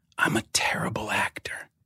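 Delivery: hushed, soft, breathy whisper. Retelling how he leaned across the poker table: imitating a whisper. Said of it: "he whispers in my ear and he goes".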